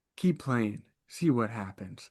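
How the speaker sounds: soft, gentle, kindly mother's tone. Retelling what the mom in a Lego commercial says: imitating a gentle mom. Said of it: "gentle, she's like".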